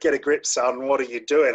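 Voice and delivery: military drill instructor voice. The speaker describes talking to themself in their head, drill instructor impression. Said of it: "I talk to myself in that voice".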